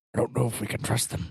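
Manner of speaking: rough-edged gruff delivery. Voicing an overheard stranger who doubts the group: gruff voice. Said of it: "You just hear a gruff voice".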